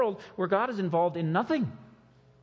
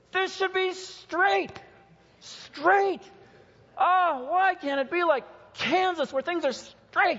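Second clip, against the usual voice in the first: high, loud mock yell. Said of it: "start yelling".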